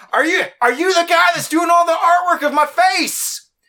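loud, very high-pitched yell. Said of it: "He said it like that?".

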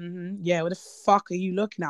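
put-on condescending tone. Retelling how people at an event looked down on her: imitating condescending people. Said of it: "looking down at you like".

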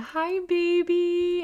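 mock very high, gasped, drawn out. Retelling first touching the baby's head: retelling a smiling gasp. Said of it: "gasped and smiled and said".

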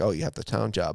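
ordinary delivery

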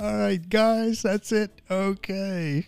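quiet, soft, hushed voice. Host wrapping up at the end of the show, in a soft voice. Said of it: "Why does he do that soft voice at the end?".

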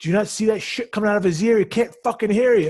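put-on high-pitched yelling. Recounting a movie scene, imitating Sizemore yelling at a truck driver. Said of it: "Sizemore is yelling at the guy like".

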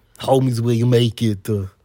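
put-on Austrian accent, put on. Prompted by the other speaker, a guest does an Arnold Schwarzenegger impression. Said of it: "Now I want you to say".

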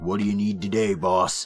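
put-on grizzled, crusty old bartender voice. Voicing a crusty old rabbit barkeep with an eye patch: crusty old rabbit barkeep voice. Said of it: "crusty old rabbit ... eye patch and a big mustache".

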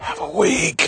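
hushed whisper, barely voiced. Signing off the show while people nearby can hear, whispering. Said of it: "I'm whispering because people can hear me".

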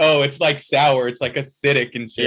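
ordinary talk

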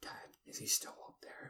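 put-on soft, unvoiced, creepy child whisper.

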